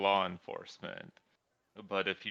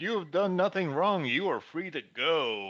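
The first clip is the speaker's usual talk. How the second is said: loud, high-pitched official announcer voice; 8 semitones higher, 4 dB louder than usual. Game master voicing a man after arranging to meet her, loudly. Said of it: "And then loudly he's like".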